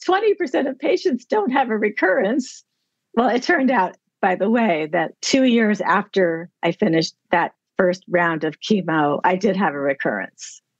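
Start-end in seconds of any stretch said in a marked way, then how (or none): 0.0-2.6 mock bright, upbeat, cheerful voice, pitched up. Retelling what a woman who upset the speaker said, imitating her happy voice. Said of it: "She said in her happy voice".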